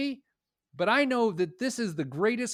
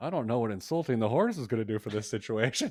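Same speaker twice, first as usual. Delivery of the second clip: put-on mutter under the breath, lower; 7 semitones lower than usual. Retelling a remark muttered to an uncle on a vet call: retelling muttering under breath. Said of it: "and I sort of under my breath".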